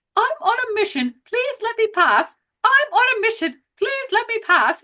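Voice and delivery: very high, very British robot voice. Retelling what a robot kept saying while stuck around chairs, in a very british accent. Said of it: "in a very British accent".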